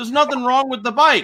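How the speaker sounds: very high, shrill screaming outburst. Retelling watching a video about a man's motorcycle rotors, retelling screaming at the screen. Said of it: "I'm like screaming at my screen".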